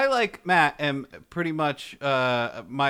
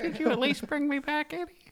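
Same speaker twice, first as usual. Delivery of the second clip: very high, soft character voice; 13 semitones higher, 5 dB quieter than usual. Voicing a character in a group scene, doing the Marbles voice. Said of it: "It's a fun voice to do".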